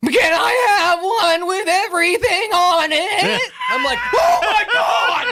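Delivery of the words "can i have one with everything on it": loudest, booming, heavily auto-tuned blaring voice. Retelling how Rocket rolled up to the window and spoke, imitating Rocket's loud auto-tuned voice. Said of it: "loudest, most auto-tuned voice I've ever heard".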